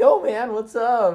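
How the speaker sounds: very high, very loud, squeaky cracking voice. Pretending to be a friend whose voice always cracks: imitating Zach, cracking voice. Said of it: "you pretend you're Zach".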